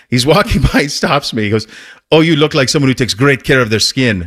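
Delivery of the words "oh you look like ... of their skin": poor, unconvincing put-on Swedish accent. Retelling a man at a paid spot stopping him as he walks by, bad Swedish accent. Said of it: "that's not exactly a Swedish accent".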